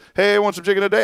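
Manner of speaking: rushed, run-together, very high rattled-off delivery. Retelling how they say the greeting there now: imitating fast rushed speech. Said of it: "they say it so fast now".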